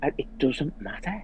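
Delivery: very quiet, soft, gentle, kind tone. Retelling what the speaker said to themself, in the kindest voice. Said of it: "saying to myself in the kindest voice".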